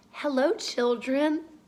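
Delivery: very sweet, sugary, honeyed tone. Reading a children's story aloud, the narrator voices a character: very sweet voice. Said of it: "someone said in a very sweet voice".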